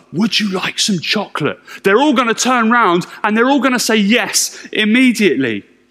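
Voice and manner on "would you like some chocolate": soft, barely voiced whisper. Showing how a question to the kids sounds: whispering. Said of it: "I walk into a room and I whisper".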